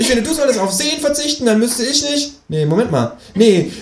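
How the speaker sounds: high-pitched kangaroo voice.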